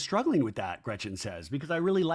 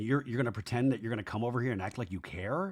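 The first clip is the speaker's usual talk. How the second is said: mock very calm voice, quieter and faster; 4 semitones lower, 5 dB quieter than usual. Recapping a scene, quoting a man's words to a woman, retelling a very calm voice. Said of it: "in a very, very calm voice".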